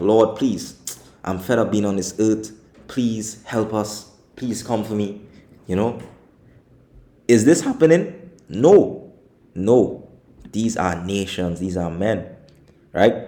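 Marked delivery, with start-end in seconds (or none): 0.0-5.2 mock pleading character voice. Joking that the mountains might beg the Lord: voicing a pleading mountain. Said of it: "Are the mountains outside really being like".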